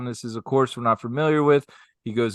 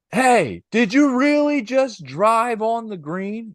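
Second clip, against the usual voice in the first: put-on woman's screaming voice, higher; 10 semitones higher than usual. Retelling how a woman at the golf green screamed at a guy: imitating a screaming woman. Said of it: "screams over to the guy".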